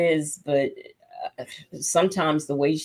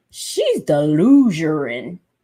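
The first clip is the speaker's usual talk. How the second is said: swooping put-on voice, pitch swinging wide; 4 dB louder than usual. Commenting on a woman, in an Andrew Caldwell voice. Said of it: "in my Andrew Caldwell voice".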